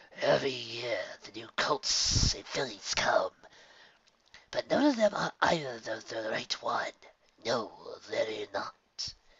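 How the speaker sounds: gurgling, hissing creature mutter. Reading a lurking creature's line in a story: gurgling, hissing creature voice. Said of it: "speaking in a strange voice that was as much a gurgle as it was a hiss".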